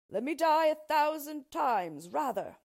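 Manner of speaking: high unhappy outcry. A chained king answers the dwarf's offer to the princess, crying out. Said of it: "cried the unhappy king".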